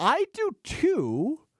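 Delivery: deliberately very high put-on voice. Agreeing with another speaker about the lineup: high voice. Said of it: "I say with a high voice".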